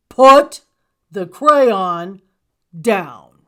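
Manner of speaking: deep, slow, very loud booming monster growl. Reading a story aloud, the narrator voices Gabe the monster: growling. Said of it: "as he growled".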